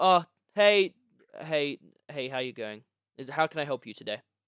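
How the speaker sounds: grudging, slightly annoyed, a bit put out. Voicing a man behind a desk as visitors open the door, a little upset. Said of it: "He's a he's a little bit upset".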